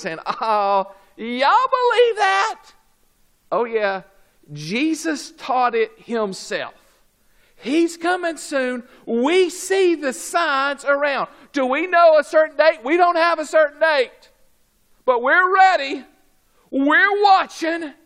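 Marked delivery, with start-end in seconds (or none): 0.2-2.7 high, slow mocking scoff. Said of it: "People are mocking and ridiculing".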